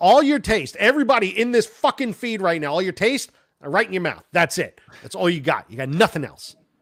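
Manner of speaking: high-pitched, shouted, yelling rant. Yelling at the audience about their taste in music: yelling at the audience. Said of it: "I'm yelling at our audience".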